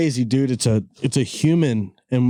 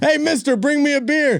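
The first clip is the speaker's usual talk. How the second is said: mock shouting as if across a room, higher pitch; 14 semitones higher than usual. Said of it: "You just yelling".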